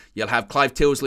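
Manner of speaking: ordinary talk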